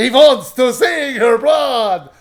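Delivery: loud, slow, booming mock vampire voice.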